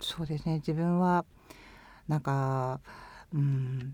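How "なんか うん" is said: low, subdued voice tone. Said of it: "声、声のトーンが低い。".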